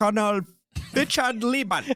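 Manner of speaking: put-on German accent. Saying the Indiana State Park founder's name in a German accent. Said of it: "Can you say his name in a German accent?".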